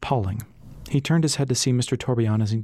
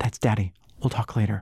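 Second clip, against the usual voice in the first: hushed whisper. Callie tells Ras her father has come home, whispered. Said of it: "Callie whispered".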